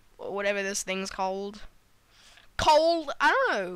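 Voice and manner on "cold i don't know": slow, terrible fake British accent. Playing a game, the speaker slips into the worst British accent ever. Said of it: "that was the worst British accent ever".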